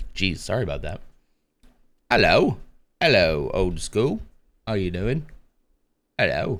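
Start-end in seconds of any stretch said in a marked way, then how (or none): 2.1-6.6 friendly voice with a British English accent. Greeting a viewer named old school: British accent. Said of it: "my British accent's coming back".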